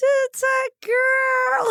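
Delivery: very high-pitched voice. Retelling the moment the cake is cut, quoting Dylan's announcement in his really high voice. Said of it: "His voice was really high".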